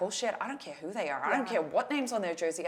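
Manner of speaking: play-acted no-nonsense, forceful, firm delivery. Retelling a pep talk given after a bad race: retelling own forceful pep talk. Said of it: ""This is what's gonna happen" mode".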